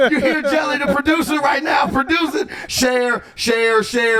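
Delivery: high, excited, hyped shout.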